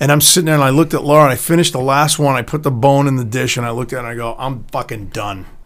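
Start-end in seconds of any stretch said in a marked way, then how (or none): 4.4-5.5 put-on irritable, angry, blunt, hard-set tone. Retelling finishing a meal and announcing being done: imitating own angry remark. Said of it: "You probably said it exactly like that".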